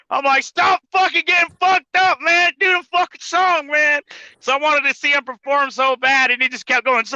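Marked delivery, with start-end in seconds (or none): 0.4-4.0 put-on high, drunken, angry yelling. Retelling yelling from the back of the crowd: imitating own drunk yelling. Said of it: "I'm all yelling".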